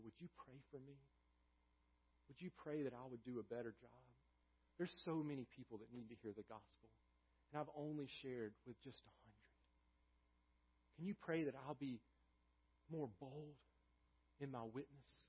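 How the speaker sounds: acted ashamed tone. Retelling a man asking a missionary board worker for prayer, retelling an ashamed plea. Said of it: "he was ashamed".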